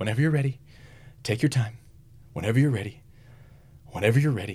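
soft, hushed, repeated stage half-whisper. Retelling a hunting story, imitating father-in-law: imitating someone half-whispering. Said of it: "I just keep hearing him whisper".

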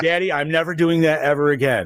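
plain

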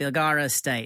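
subtle, low-key Australian accent. Asked to say the name in the accent, low-key australian accent. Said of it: "Say it in your low key Australian voice".

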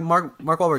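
usual speaking voice

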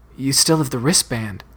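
whispering. Narrator reading a character's line during an argument, whispering. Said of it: "she whispered".

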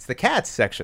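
"cats" exclaimed sharply, as with an exclamation point.

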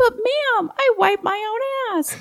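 put-on very high, drawn-out hollering voice. Retelling a soldier's reply after she yells at him: retelling a soldier's holler. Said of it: "he hollers out to me".

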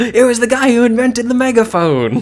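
very high, shrill, loud screaming shout. Retelling a scene where Zenigata shouts at an Egyptian soldier: Zenigata shouting. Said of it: "And he shouts at him".

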